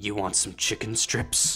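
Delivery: imitated odd old man's voice. Retelling how an old man offered chicken strips: imitating an old man's odd voice. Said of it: "he spoke in this voice".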